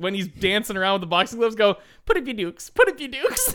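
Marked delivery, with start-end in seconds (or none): 2.1-3.5 high-pitched, fun, playful little voice. Imitating a dancing clown in boxing gloves: Shorty's high-pitched fun little voice. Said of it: "a high-pitched, fun little voice".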